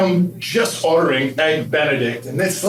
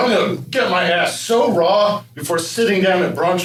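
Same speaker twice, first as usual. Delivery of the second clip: usual speaking voice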